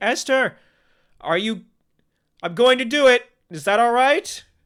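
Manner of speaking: very high, very loud shouting yell. Narrating a game scene, the speaker voices Joel yelling to Esther across the ravine. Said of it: "yells out to you".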